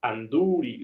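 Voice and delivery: Anduril, stress on long -dú-. Spanish stress lesson on a long vowel, stress on long U in Anduril. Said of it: "la U es larga... vocal larga. Ahí enfatizamos".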